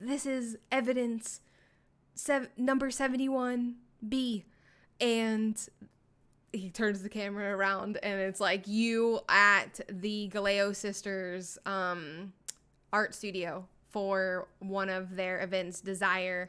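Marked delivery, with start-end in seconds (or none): 0.0-4.4 put-on whisper, pitched higher. Retelling how a man filmed himself hiding in a bush, retelling a whisper. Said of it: "he's like whispering to the camera".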